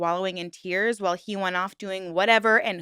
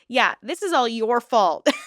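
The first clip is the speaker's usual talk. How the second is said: pointed, dry, blatant sarcasm; 2 semitones higher, 4 dB louder than usual. Reacting to a story about a cheating ex, sarcastic. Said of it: "Obviously, that's sarcasm".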